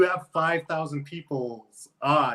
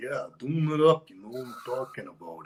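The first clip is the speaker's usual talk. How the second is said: quiet wrestler voice with the hype held in; 2 semitones lower than usual. Retelling doing an impression for the others in the van: Macho Man impression. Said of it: "talk a little quiet as Macho Man".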